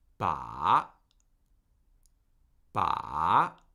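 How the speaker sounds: ba in third tone, dipping down then rising. Teaching tones, demonstrating the syllable for learners to copy: third tone on ba. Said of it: "this time with a third tone".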